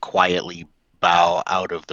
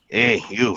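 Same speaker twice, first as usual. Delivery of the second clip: grumbling, stumbling, grumbly put-on voice; 4 semitones higher than usual. Playing a character who stumbles through a door, calling out: grumbling in character. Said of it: "grumbling and acting like I'm stumbling".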